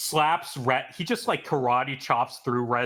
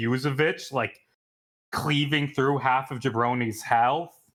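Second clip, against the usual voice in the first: ordinary talk, nothing marked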